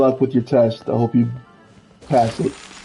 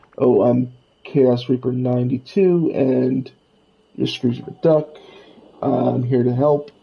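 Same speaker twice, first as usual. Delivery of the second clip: ordinary talk, nothing marked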